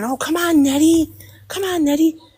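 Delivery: high-pitched screaming, loud. Retelling what she screamed during a battle: imitating someone screaming. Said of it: "she was screaming".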